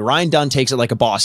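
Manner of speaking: usual speaking voice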